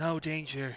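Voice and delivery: whispered, quiet voice. Voicing a mysterious voice at a door: whispering voice. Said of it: "The voice whispers".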